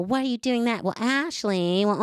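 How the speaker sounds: mock judgmental, cutting, needling tone, pitched high. Complaining about a woman who cuts them down, mimicking a judgmental tone. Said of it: "it's this judgmental fucking tone".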